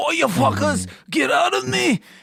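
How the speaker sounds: put-on high-pitched shriek in a British accent. Retelling a Fargo scene: imitating Juno Temple screaming in a British accent. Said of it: "she kept screaming in a British accent".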